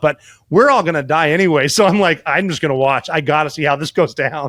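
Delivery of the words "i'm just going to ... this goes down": ordinary talk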